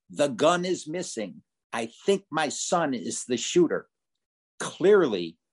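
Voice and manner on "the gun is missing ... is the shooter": normal talking voice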